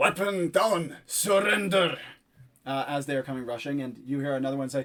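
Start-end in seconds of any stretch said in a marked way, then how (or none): 0.0-2.0 put-on Metro accent. Voicing guards rushing in to make an arrest: strong Metro accent. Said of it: "speaking out with kind of a strongly accented metro".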